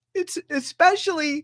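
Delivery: crying happy tears. Talking about friends who helped through rough times, crying happy tears. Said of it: "these are almost halfway happy tears too".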